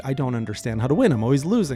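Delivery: ordinary delivery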